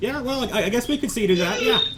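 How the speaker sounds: high, hesitant villager voice. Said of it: "He says".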